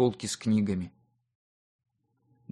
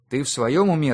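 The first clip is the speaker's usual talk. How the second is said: ordinary delivery, nothing marked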